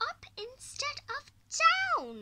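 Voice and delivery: very loud, sharp, shrill, booming snappy tone. A grandmother answers a little boy's question, snapped. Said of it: "she snapped".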